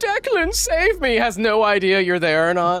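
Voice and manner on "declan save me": very high, shrill, desperate scream. Voicing a character screaming to Declan for rescue: screaming for help. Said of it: "She's screaming".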